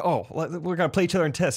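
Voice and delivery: normal talking voice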